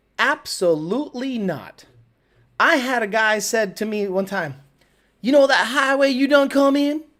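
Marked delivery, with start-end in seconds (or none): 5.2-7.0 exaggerated Texas Southern drawl, pitched up. Retelling a local's question: over-the-top Texas accent. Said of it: "over the top with my accent".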